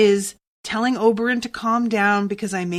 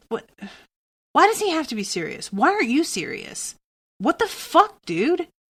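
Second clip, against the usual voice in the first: annoyed, exasperated, irritated, high swooping pitch; 5 semitones higher than usual. Reacting to a character in the book being read: irritated. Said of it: "I'm so irritated".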